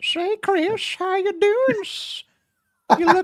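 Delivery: shrill, very loud, high squealing creature voice. Trying to imitate a voice, the speaker greets someone in a Sméagol-ish voice. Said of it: "It's almost like Smeagol-ish".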